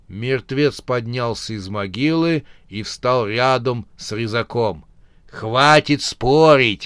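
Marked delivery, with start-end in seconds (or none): 5.2-6.8 annoyed, irritated hissing. A dead man, risen from his grave, scolds the arguing pair: irritated hiss. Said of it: "раздраженно прошипел мертвец".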